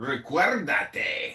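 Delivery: idiosyncratic, odd, unusual Spanish pronunciation. Speaking spanish to the other speaker: odd way of speaking spanish. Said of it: "Why are you talking like that?".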